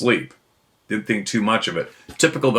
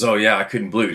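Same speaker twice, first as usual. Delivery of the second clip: put-on excited tone. Retelling what a boy said at dinner, imitating someone excited. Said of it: "excitedly goes".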